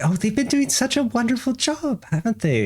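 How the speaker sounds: put-on delighted tone. Retelling what a woman said when she cut him off, acting out her delight. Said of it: "she's like all delighted".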